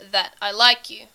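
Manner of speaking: ordinary delivery, nothing marked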